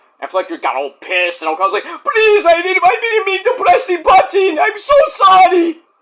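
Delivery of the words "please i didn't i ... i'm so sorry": put-on pleading, much higher pitch, slower pace. Recapping a match, acting out Okada apologizing after hitting the other wrestler: mock-pleading apology. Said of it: "asks for his forgiveness".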